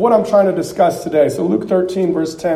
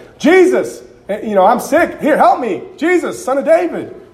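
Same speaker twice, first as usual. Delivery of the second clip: mock high yelling; 7 semitones higher than usual. Retelling how the blind man Bartimaeus called to Jesus: imitating Bartimaeus yelling. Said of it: "the blind man named Bartimaeus was yelling".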